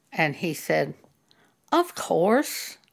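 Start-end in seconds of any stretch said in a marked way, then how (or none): 1.8-2.8 careless, uncaring, offhand tone. Retelling how a church member answered being confronted: imitating an uncaring "of course". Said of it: "He said it in that tone of voice".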